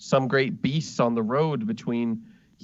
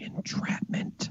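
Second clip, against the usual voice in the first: barely voiced, very quiet whisper. Retelling a scene, the speaker quotes a woman saying one word, retelling a whisper. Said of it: "and she whispers".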